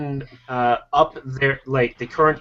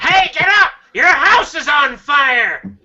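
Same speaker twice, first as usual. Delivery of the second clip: very high-pitched, loud comic yell; 13 semitones higher, 7 dB louder than usual. Playing a smoke detector alarm that warns of a house fire, in a Gilbert Gottfried impression. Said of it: "That's my best impression".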